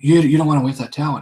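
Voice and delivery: normal talking voice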